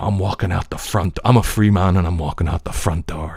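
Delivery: Irish-accented voice. Quoting a film line to show the dialect learned: irish accent. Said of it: "that's kinda what I was channeling".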